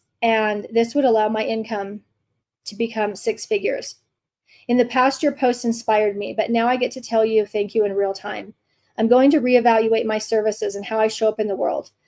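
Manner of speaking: usual speaking voice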